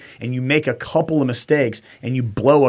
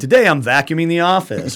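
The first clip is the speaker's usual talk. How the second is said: very intense instructor-style voice; 4 semitones higher, 3 dB louder than usual. Retelling daily work tasks, the speaker narrates them in a Pat McNamara impression. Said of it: "my best Pat McNamara voice because he's super fucking intense".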